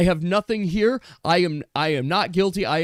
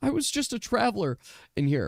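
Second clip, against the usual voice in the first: tearful crying voice, close to breaking; 3 semitones higher, 6 dB quieter than usual. Voicing a lizard-folk character defending himself, crying, barely holding together. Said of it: "he's like crying. He could barely contain himself".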